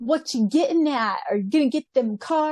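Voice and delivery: put-on Bronx New York street accent. Retelling how a dubbed character talks: imitating a bronx accent. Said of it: "sounds like he's from the Bronx, New York".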